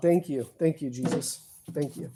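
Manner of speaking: soft, ironic, mock-grateful sarcastic tone. Working on thirty-year-old wires, sarcastic. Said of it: "that was sarcastic".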